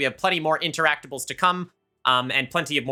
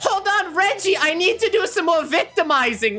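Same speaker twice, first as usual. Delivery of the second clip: very high-pitched character voice; 4 dB louder than usual. Voicing the ex-wife calling out from across the workshop: voicing Reginald's ex-wife. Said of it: "you hear the voice from back".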